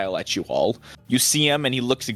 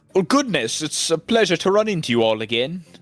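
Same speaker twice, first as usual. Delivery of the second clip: fairly raised, loudish, high-pitched, cheery voice; 6 semitones higher than usual. Voicing a robed figure greeting the party again: loudish voice. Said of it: "with a sort of loudish voice".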